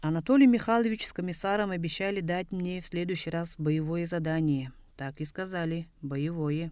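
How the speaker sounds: ordinary delivery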